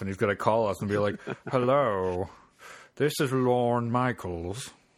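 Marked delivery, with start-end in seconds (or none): 1.5-4.7 deliberate, slow, drawn-out, put-on vaguely British accent. Imagining Lorne Michaels phoning the hosts: Dr. Evil impression. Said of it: "Is he British?".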